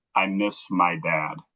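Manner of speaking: very slow, soft half-whisper, drawn out. Retelling what a little kid said into his ear: imitating a half-whisper. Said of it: "and whispered into my ear".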